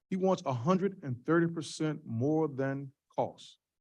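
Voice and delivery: very slow, deliberate, drawn-out, word-by-word delivery. At a council hearing, a speaker spells out the CFO's demand: said real slow. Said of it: "Let me say that real slow".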